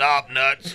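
ordinary delivery

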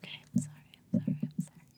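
hushed, rushed, barely-there near-whisper. Apologizing after being told to be quiet: very quiet voice. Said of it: "You don't have to be that quiet".

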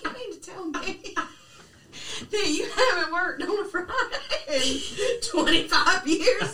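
high, very slow, drawn-out, furious words. Retelling a scene where Lois gets super pissed: imitating Lois super pissed. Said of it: "Lois gets super pissed".

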